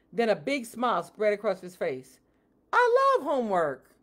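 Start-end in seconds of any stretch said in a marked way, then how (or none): 2.7-3.8 overjoyed, gleeful, excited high cry. Narrator reading a student told by his teacher he has homework: exclaiming, jumping up and down. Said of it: "he cried, jumping up and down".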